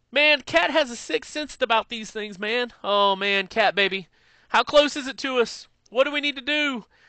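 very high, eager, excited, pleading voice. Retelling what the driver said to his partner: imitating Kelly. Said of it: "Kelly says".

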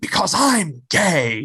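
put-on dramatic comic-book hero cry, high and light. Retelling a comic scene of a hero punching a Mountie: imitating North Star yelling. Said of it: "he's yelling".

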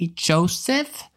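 put-on British accent. Acting out Mary asking Joseph on the trip: Mary in a British accent. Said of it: "maybe she's British".

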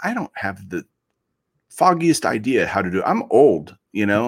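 normal talking voice

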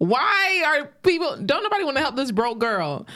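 re-enacted yelling. Quoting a man's reaction to a woman's story, retelling someone yelling. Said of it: "And then he was like yelling".

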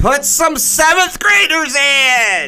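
slow high-pitched yelling. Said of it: "one of the moms up in the stands yells".

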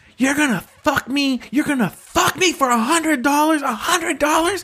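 mock screeching scream at very high pitch. Retelling a fight seen from a car, imitating a woman screaming. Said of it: "she starts screaming".

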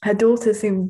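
ordinary delivery

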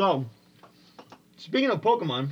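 talking with mouth full. Changing the subject to Pokemon while eating pizza: chewing while talking. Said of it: "sorry, I'm chewing my pizza".

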